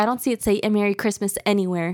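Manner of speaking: mock-angry, acted-out angry woman voice. Acting out what a woman told the managers, imitating her being mad. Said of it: "She was mad".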